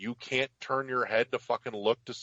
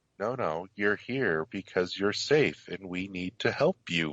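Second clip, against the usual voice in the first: put-on creepy, monotone nurse voice; 4 semitones lower than usual. Describing a game's creepy nurse who lets you out: creepy monotone nurse voice.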